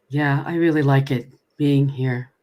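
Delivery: low, dead-level flat monotone delivery. Showing how tv characters would sound doing dialogue: total monotone. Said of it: "doing dialogue in total monotone".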